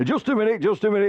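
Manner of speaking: mock shrill, very high-pitched shout. Retelling an anecdote, imitating the club chairman: imitating the chairman shouting. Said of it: "this voice from the back, from the chairman shouted".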